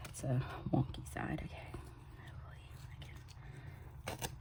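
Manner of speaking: soft, unvoiced whisper. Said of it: "I don't know why I whisper sometimes".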